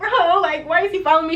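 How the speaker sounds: mock frightened, tearful, crying voice. Retelling being followed, speaker re-enacts what they said: retelling crying in fear. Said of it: "I'm crying like".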